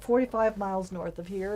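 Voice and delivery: ordinary talk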